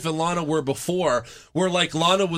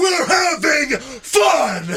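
mock scream, very high, shrill and loud; 11 semitones higher, 5 dB louder than usual. Recounting a wrestler's moment to the camera during a match, imitating Ryback screaming. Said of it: "Ryback screams to the camera".

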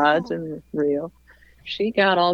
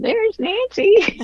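tiny, shrill, screechy little voice, very high; 4 dB louder than usual. Retelling hearing someone call out across the room, in Millie's screechy little voice. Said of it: "Millie's screechy little voice go".

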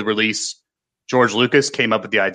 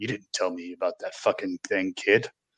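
very quiet half-whisper, said as an aside; 3 semitones lower, 10 dB quieter than usual. Retelling what Harrison Ford said to Mark Hamill at the premiere: half-whispered Harrison Ford impression. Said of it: "leaning over and whispering that".

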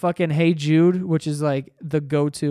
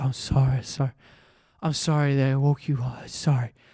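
put-on mimicking drunken speech; 3 semitones lower, 4 dB quieter than usual. Retelling how a drunk brother kept apologizing: imitating a drunk person apologizing. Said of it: "when he gets drunk, just starts apologizing".

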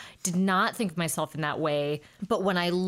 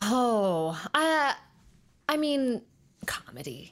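hesitant, unsure delivery; 6 semitones higher than usual. Asked which comes more naturally to her, answering hesitantly. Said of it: "She said hesitantly".

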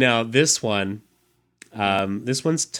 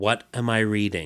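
ordinary talk, nothing marked

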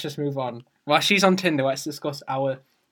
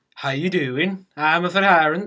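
fake, put-on Swedish accent; 3 semitones higher than usual. Offering to act for Jess, trying out a fake Swedish accent. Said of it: "how does a Swedish person talk again?".

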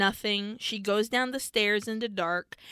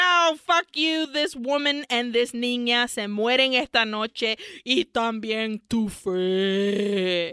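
demon voice with fe drawn out. Retelling a scene where the demon comes back to the held woman: demon voice. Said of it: "I love the voice of the demon".

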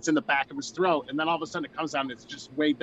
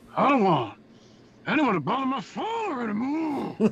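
put-on clenched-jaw voice, much higher pitch; 9 semitones higher than usual. Taking a turn imitating a film line said with a broken jaw, clenched-jaw voice. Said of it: "You got to clench it".

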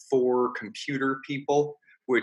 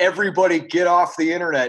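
acted-out loud, high dad shouting; 5 semitones higher, 5 dB louder than usual. Retelling how a head coach yelled at his children when his internet went down, in a loud dad voice. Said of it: "in a loud dad voice".

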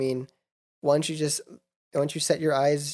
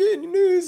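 very high, teary voice cracking and breaking; 4 dB louder than usual. Retelling how their mom asked about the news, imitating mom's cracking voice. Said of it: "Like her voice cracking and everything".

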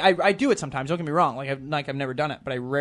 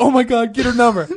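put-on excited voice, higher and louder; 9 semitones higher, 10 dB louder than usual. Retelling a night out, imitating Kyle freaking out. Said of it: "Kyle just freaking out".

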